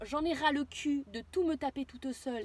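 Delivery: ordinary talk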